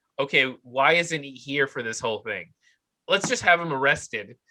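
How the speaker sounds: normal talking voice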